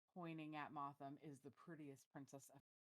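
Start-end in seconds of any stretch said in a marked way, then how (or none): 1.3-2.6 whisper, lower and quieter. Voicing Naja leaning over to another character: whispering in character. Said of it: "Naja's gonna lean over and whisper".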